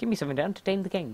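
bizarre, weird, high-pitched made-up character voice. Reading a game character's line aloud: weirdest put-on character voice. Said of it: "that was the weirdest voice I've ever done".

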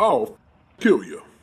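animal voice of a buffalo. Telling of a buffalo blocking the street, imitating a buffalo's voice. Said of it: "(imitates buffalo's voice)".

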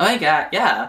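put-on talkative, chatty girl voice. Imitating how a girl who talks a lot sounds, chatty girl voice.

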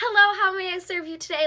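loud, acted, overly nice, super polite voice. Imitating customer service staff answering a call: imitating a super polite greeting. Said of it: "super nice, super polite".

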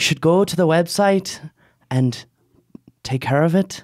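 put-on Irish accent. Comparing Irish and New Mexican accents, the speaker does an Irish accent. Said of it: "Like Irish accent".

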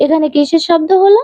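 ordinary delivery, nothing marked

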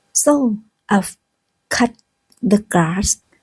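slow, separated words with pauses, word-by-word reading.

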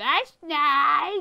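mock elderly woman voice. Replying to the other player in a put-on old lady voice. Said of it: "I said that's nice. In an old lady voice".

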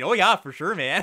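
hammed-up, laid-on Canadian accent. Two card reviewers joke about sounding Canadian; Canadian accent. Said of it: "We sounded so Canadian".

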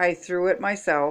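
ordinary delivery, nothing marked

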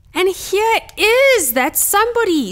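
put-on very high, loud, squeaky baby animal voice. Narrator reads the baby bear's line as the bears find the sleeper, squeaking. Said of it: "squeaked Baby Bear".

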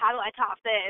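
plain

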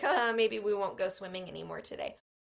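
fast, offhand joking tone. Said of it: "joked with her sisters".

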